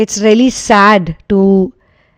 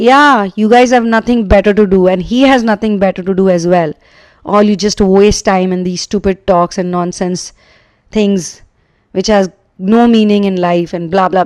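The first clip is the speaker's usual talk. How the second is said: normal talking voice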